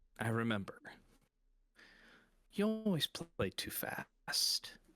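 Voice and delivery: wistful, yearning, melancholy feminine tone full of longing. Voicing a half-whisper that washes over the group: half-whispering feminine voice, melancholy and longing. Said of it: "a whisper washes over Rowan ... a distinctively feminine voice go".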